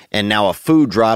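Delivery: ordinary talk, nothing marked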